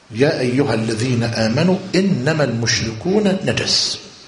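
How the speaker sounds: normal talking voice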